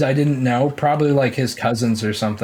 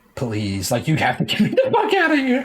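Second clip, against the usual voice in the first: mock begging, swooping and sing-song. Retelling begging Mom to let them leave, mock pleading. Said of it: "I was pleading".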